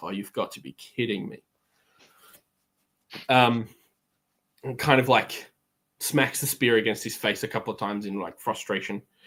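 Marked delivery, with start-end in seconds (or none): 0.0-1.4 low, soft mumble. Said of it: "He's just gonna kind of mumble to himself".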